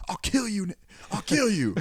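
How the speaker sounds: very high, furious, threatening put-on scream. Retelling what a performer in a public prank screams: imitating someone screaming. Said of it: "the one screaming, like".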